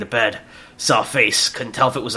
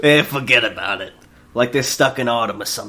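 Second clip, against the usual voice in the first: put-on New Yorker accent throughout. Reading a script aloud at a co-speaker's suggestion, in a new york accent. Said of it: "a New York accent".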